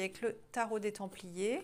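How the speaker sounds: ordinary talk, nothing marked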